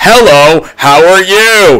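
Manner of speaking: creepy, terrifying, polite man's voice. Retelling the opening dialogue of Fantasy, imitating a man's voice. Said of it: "this man's voice is just like".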